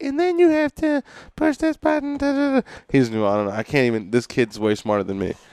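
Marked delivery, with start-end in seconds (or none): 0.0-2.7 put-on very high little toddler voice, chattering. Retelling a video of a little boy in a plane: imitating a two-year-old boy. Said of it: "a two-year-old boy who was like".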